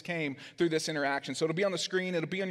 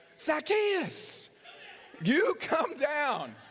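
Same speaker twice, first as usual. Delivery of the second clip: put-on very high, swooping, drawn-out young-boy holler; 11 semitones higher than usual. Showing the congregation how to call the line: yelling like a third grade boy. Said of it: "say it like a fourth grade or a third grade boy when they're yelling it".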